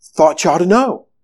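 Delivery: very calm. Narrating a professor who stops in the common room before collapsing, very calm. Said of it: "very calmly says".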